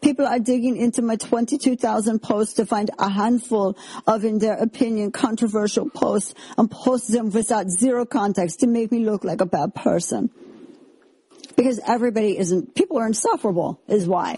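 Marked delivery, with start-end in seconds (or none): 0.0-10.3 put-on German accent, higher pitched. Reading aloud a quoted Instagram post: put-on German accent. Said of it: "I'm just assuming German accent".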